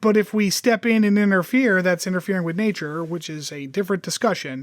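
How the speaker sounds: ordinary talk, nothing marked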